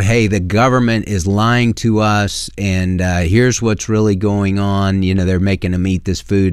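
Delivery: plain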